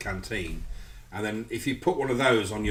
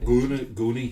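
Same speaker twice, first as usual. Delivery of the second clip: put-on Scottish accent, much louder; 2 semitones higher, 5 dB louder than usual. Trying to say a word in a put-on scottish accent. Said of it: "trying to do it in a Scottish accent".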